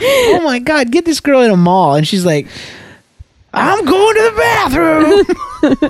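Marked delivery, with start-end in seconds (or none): 3.5-5.9 very high, drawn-out, slow public announcer-style call. Retelling the wife announcing a bathroom trip in a mall: imitating wife shouting in a mall. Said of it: "my wife is shouting her intentions".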